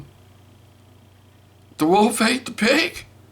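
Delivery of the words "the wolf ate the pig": put-on very high, upset, whimpery little-girl voice. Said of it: "she's going".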